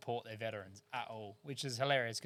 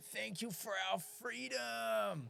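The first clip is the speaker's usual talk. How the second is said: put-on very high, slow, drawn-out raspy yell; 11 semitones higher than usual. Retelling what a fan behind them at the football kept shouting: imitating a woman yelling. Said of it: "this woman the whole time yelling".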